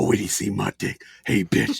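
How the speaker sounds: low whisper. Retelling whispering into a partner's ear in bed: retelling whispering in someone's ear. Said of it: "whisper right in her ear, and I go".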